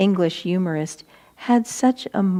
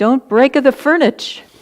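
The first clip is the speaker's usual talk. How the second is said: calm put-on Italian accent, pitched up; 5 semitones higher, 8 dB louder than usual. Retelling a reaction to a broken cup: imitating Swami's fake Italian accent. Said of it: "with this fake Italian accent".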